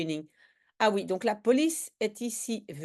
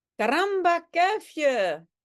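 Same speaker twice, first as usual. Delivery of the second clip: put-on Spanish accent on Dutch words, pitched up; 7 semitones higher, 4 dB louder than usual. Reading a comic's Dutch dialogue aloud, the general answers his former adjutant: put-on Spanish accent. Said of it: "on va en fait imiter l'accent espagnol".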